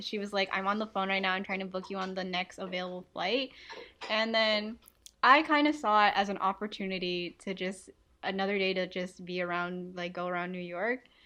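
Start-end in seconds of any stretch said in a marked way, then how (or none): none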